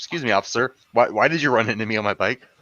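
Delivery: play-acted, very calm, unruffled, polite tone. Retelling what a cyclist said after a cop hit him: imitating a very calm cyclist. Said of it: "The guy was very calm".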